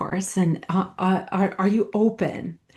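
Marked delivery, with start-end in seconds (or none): 1.3-2.5 put-on speaking in a British accent. Retelling what a coach said in a session: imitating a coach's British accent. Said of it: "In his British accent".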